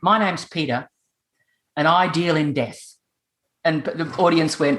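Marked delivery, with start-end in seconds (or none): 0.0-2.8 put-on deadpan delivery. Retelling a pest controller's opening line to an audience: imitating Peter's deadpan delivery. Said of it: "he could do it deadpan".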